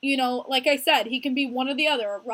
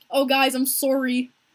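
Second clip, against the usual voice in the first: put-on Canadian accent, slower. Speaker quotes someone who won't admit his accent, imitating a Canadian accent. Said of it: "He says, like, the Canadian".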